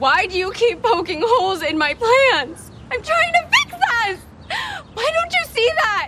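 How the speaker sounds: loud upset outburst. In an argument with a partner, a loud upset outburst. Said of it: "Calm down. Someone's gonna hear you".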